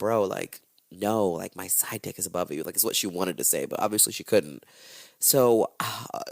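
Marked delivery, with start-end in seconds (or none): none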